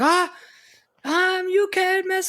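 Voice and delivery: very high, slow, drawn-out wrestler's yell. Retelling a wrestling promo, imitating Ric Flair yelling. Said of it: "just doing his typical yelling".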